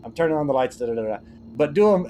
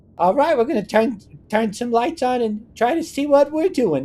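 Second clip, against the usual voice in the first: very high, stupid-sounding character voice; 12 semitones higher than usual. A speaker voices lines for a character they created, in the stupid John Doe voice. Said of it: "just the random stupid voices of John Doe".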